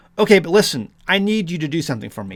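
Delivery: ordinary delivery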